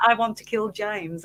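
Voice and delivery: ordinary talk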